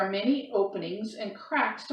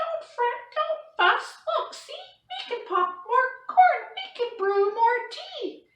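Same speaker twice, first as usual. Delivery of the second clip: tiny, very high squeaky voice; 3 dB louder than usual. Narrating a story, read Mouse's reply to the unhappy bear in a squeaky Mouse voice. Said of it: "Mouse squeaks".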